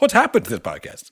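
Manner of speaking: put-on rant, high-pitched and loud.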